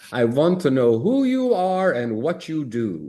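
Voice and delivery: put-on Italian accent, sing-song, high and swooping. Retelling a first meeting with a future mentor: imitating an Italian accent. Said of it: "I heard this Italian accent say to me".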